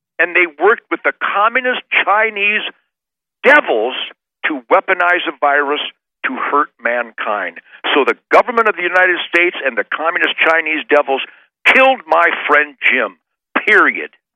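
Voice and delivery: furious, intent, focused angry delivery. Mourning his friend jim, who died, the speaker speaks in an angry voice. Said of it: "I can hear the anger in your voice".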